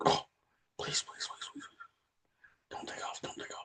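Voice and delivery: hushed, scared, pleading whisper. Retelling a dad gripping the seat at takeoff, imitating a terrified plea. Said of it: "as scared as can be".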